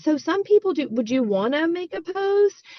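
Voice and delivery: halting, unsure tone. Contrasting an urgent, excited ask with a hesitant one, demonstrating: hesitant. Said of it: "the hesitation of being like".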